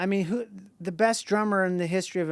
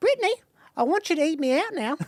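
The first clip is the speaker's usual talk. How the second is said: put-on Australian accent in a woman's voice; 12 semitones higher, 4 dB louder than usual. Talking to a wife in an imitated Australian woman's voice: Australian woman impression. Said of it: "She kinda talks like this".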